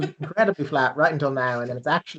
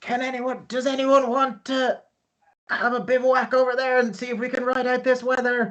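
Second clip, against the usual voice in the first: restrained, held-back, pitched-up shout; 9 semitones higher than usual. Asking the party in character to ride out the weather: yelly and quiet at once. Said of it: "me trying to be yelly and quiet at the same time".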